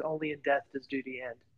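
quiet, dead-straight deadpan, no reaction. Retelling a Space Marine answering a question about retiring, speaker acts out a deadpan reply. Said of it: "he looks at him deadpan and goes".

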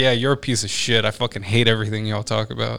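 plain

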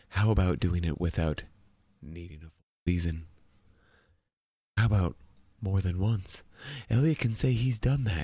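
low, hushed public-radio announcer reading voice. Reading Zeke's piece aloud as Emily asked, NPR voice. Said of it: "read one like we're on NPR".

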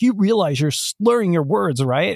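put-on freaked-out, high, alarmed voice. Retelling what the on-call doctor said: imitating a freaked-out doctor. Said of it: "she freaks".

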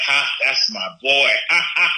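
short laugh wrapped around the spoken words. Imitating a father's laugh at a child's good grade: imitating father's laugh. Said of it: "He would do this laugh".

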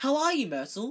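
forced, falsely bright cheerfulness in very high voice. Narrator reading Hermione greeting a sulky girl: falsely bright voice. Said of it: "Said Hermione in a falsely bright voice".

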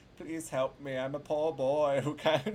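mock-sweet, pleading, begging tone. Retelling calling customer service, imitating own sweet pleading. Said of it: "more like [name], nice [name], who's like".

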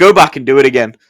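ordinary talk

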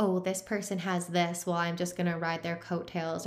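usual speaking voice

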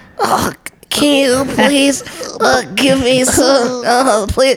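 very high, cute piglet voice. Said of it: "I started using that voice".

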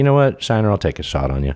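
ordinary talk

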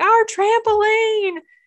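mock very high, wailing crying fit of a five-year-old. A parent retells her five-year-old's reaction to the lost trampoline: imitating Ellie Blair crying. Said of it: "she just went into like a fit of crying".

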